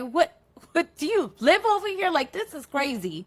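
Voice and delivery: calling out while laughing. Retelling calling out to a man unexpectedly seen: imitating own laughing call-out. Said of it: "I call out to him laughing".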